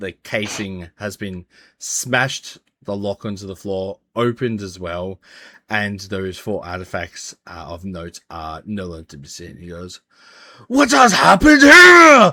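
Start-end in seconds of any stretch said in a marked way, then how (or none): 10.7-12.3 very loud, very high, shrill, enraged booming shout. Voicing a keeper who finds a smashed case: enraged shout. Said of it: "the rage in his voice".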